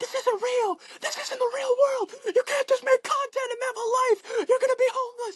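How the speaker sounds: high-pitched, shrill screaming, crying outburst. Retelling a mother's outburst at the speaker, imitating screaming and crying. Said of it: "she was screaming at me, crying".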